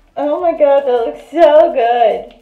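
very loud, delighted, thrilled outburst. Fitting O-rings and admiring how it looks, excited. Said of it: "I am so excited right now".

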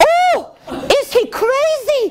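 very high, very slow, drawn-out shrieking yell. Reading a fairy tale, the princess hears the swineherd's price, yelled. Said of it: "yelled the princess".

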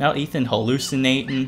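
ordinary talk

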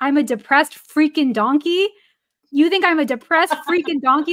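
loud, half-outraged, indignant delivery. Retelling what a teammate said on hearing the nickname: imitating someone half outraged. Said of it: "half outraged".

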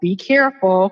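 normal talking voice

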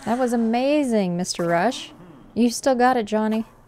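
sounding caught off guard, surprised and impressed. In a game, a character reacts after a big jump, sounding surprised. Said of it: "You sound surprised".

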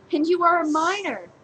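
very high, surprised exclamation. She answers the laughing man, exclaiming in surprise. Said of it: "she exclaimed with surprise".

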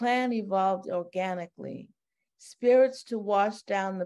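plain

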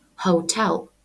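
hotel with weight on second syllable -tel. Teaching English words in Ukrainian, stress on second syllable of hotel. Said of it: "ми робимо наголос на другий склад і вимовляємо hotel".

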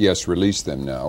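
plain

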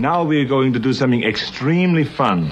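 Austrian accent impression.

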